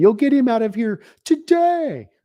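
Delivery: acted, high, screamed, drawn-out voice. Picturing a player bursting into an office at John Elway: imitating someone screaming. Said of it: "and screaming at him".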